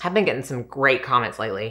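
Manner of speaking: very sarcastic, mocking, meaning the opposite. Complaining about viewer comments on the makeup channel: sarcastic. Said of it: "I'm being very sarcastic".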